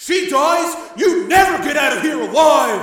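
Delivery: very loud, very high shout. Joe shouts back at a man holding the girl hostage: shouting. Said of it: "Joe shouted back".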